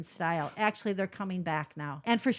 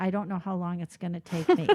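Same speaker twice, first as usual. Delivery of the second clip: put-on whisper; 3 semitones lower than usual. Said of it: "And she's whispering".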